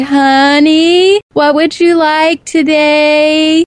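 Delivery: loud, slow, condescending. Speaker imitating people who talk to blind people, in a very loud, slow voice. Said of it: "in a very loud, slow voice".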